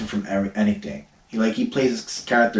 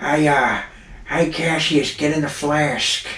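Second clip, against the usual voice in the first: goofy comedian voice, hanging on the "uh"; 4 semitones higher than usual. A speaker shows off a voice they've been practicing, doing an Adam Sandler voice. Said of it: "I've been practicing my Adam Sandler voice".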